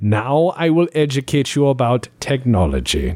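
stiff, dry, slightly stubborn German accent. Acting out a Star Trek character rescuing prisoners: German-accented, dry voice. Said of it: "just very kinda German, kinda dry".

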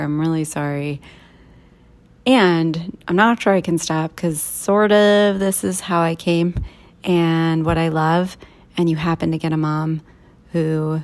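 usual speaking voice

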